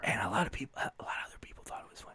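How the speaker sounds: ASMR-style whisper, kept to a whisper.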